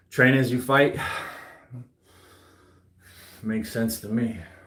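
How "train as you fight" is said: ordinary talk, nothing marked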